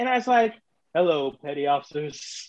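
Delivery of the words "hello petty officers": very deep voice, dropped way down low.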